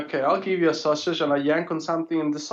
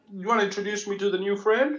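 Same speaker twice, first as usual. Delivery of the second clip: muffled, mashed words spoken through a mouthful of food; 4 semitones higher than usual. A character asks Fred to introduce the new friend, talking with mouthful of chicken. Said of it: "with a mouthful of chicken".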